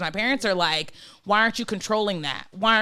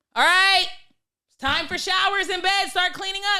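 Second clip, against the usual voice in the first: shrill, loud, very high-pitched yell; 9 semitones higher than usual. Showing how the speaker calls out to the whole group at shower time: yelled loudly. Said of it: "I'm gonna get loud real quick... I can yell and be like".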